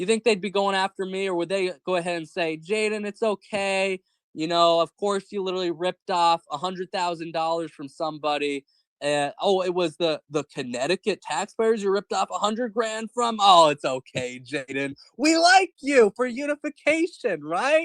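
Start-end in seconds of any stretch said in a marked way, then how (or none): 2.6-17.9 put-on falsely comforting tone, a little sarcastic. Acting out imagined defenders who excuse a scandal: put-on sarcastic mock reassurance. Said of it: "I know I'm being a little sarcastic here".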